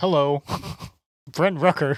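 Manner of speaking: baseball radio play-by-play announcer voice. Retelling a famous call after being asked for an impression: imitating the Athletics broadcaster. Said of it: "the one famous call where it's like".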